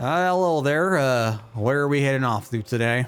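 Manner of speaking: slow drawling voice, words stretched out. Storyteller voicing a character who pulls up and greets the group, in a drawling voice. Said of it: "kind of like drawl in his voice".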